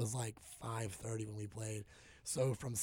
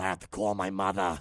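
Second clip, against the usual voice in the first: put-on raspy-throated voice, lower and louder; 4 semitones lower, 9 dB louder than usual.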